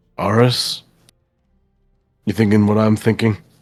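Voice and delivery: theatrical, exaggerated audible stage whisper. Speaking privately to one player, apart from the rest of the group: stage whisper. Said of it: "stage whisper to you".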